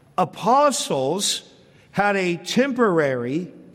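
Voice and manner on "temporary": temporary stressed hard, leaned on and slowed. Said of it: "key word there".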